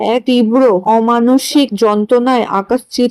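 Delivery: plain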